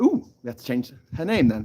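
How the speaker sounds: plain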